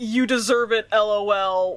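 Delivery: ordinary talk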